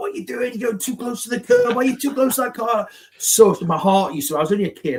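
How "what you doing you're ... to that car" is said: put-on, higher-pitched nagging voice. Retelling a car ride with a co-commentator: imitating Mick as a backseat driver. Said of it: "backseat driver, like".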